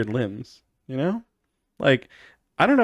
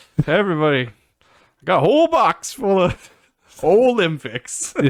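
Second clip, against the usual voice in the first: put-on old man voice, higher-pitched and louder; 5 semitones higher, 4 dB louder than usual. Riffing on how someone says Olympics, speaker does an old man voice. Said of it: "like old man".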